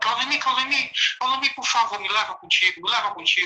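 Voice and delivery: repeated, clinging, desperate, pleading cry. Retelling a dream where the cousin begged to be taken along: imitating a desperate plea. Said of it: "e ele vinha pra mim assim".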